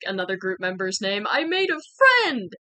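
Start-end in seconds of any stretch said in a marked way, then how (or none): 1.3-2.4 very high-pitched, delighted, excited shout. Recounting meeting someone, the speaker quotes her as she runs away, imitating someone yelling.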